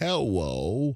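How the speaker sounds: put-on cartoon voice, drawn out. Saying Elmer Fudd is easy for him right now, Elmer Fudd voice. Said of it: "that makes Elmer Fudd very, very easy for me to do right now".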